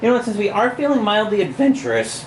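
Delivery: voice breaks with a crack inside adventurous. Reading a gamebook aloud, the speaker picks the next section, voice cracking. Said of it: "my voice cracked".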